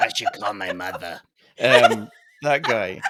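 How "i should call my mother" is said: deep, low, smoky rasp like a smoker. Saying a word the way an actor does: Harvey Fierstein voice. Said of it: "That's what the dude sounds like".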